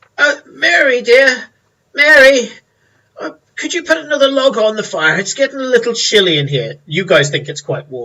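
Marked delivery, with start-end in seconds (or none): 0.2-6.8 put-on very high, raised elderly man's voice. Voicing an old man who asks mary for another log: voicing an old man. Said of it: "The old man goes".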